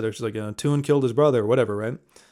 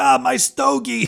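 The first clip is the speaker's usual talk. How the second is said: put-on high, raspy, grumpy, cranky old-man voice; 12 semitones higher than usual. Discussing a film, speaker mimics the baby who breaks character: Baby Herman's mock-grumpy raspy voice. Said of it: "he's like this grumpy, raspy old man".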